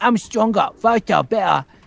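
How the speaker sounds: put-on very high, very loud child's Cockney accent. Voice actor retelling his son copying him, kid copying a Cockney accent. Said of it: "then I started doing doing Cockney".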